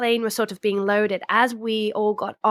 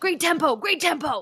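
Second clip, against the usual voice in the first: put-on lovely, pitched-up, cheering Irish accent; 7 semitones higher than usual. Speaker quotes their coach cheering during races, irish accent impression. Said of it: "in his lovely Irish accent".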